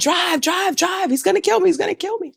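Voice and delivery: very high, frantic, panicked shrieking scream. Retelling jumping into a taxi and yelling at the driver: retelling her own screaming. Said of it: "So I'm screaming".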